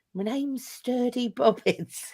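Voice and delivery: put-on whisper. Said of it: "just whispering to people".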